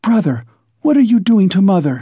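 whispering indignantly. A sister confronts her brother about their mother, indignant whisper. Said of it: "she whispered, her eyes flashing with indignation".

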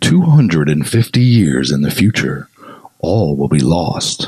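epic "in a world" movie trailer announcer voice. Reading out a tagline in a movie trailer voice. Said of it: "I'll give you the in a world voice".

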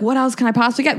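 plain

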